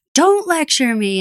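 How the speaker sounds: mock angry, heated. Discussing a TV performance, quoting the actor's line when his character was mad: imitating Josh Holloway angry. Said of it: "where he was mad".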